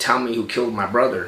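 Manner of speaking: mock tearful crying man's voice. Retelling a man at gunpoint demanding answers: imitating a crying man. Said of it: "and he was crying".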